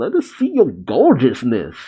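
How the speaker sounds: ordinary talk, nothing marked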